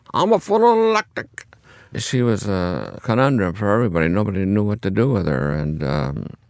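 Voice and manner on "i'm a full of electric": put-on Italian accent spoken at a very high pitch. Recounting a patient on the floor, imitate Mrs. Pepitone's Italian accent. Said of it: "she would tell in this Italian accent".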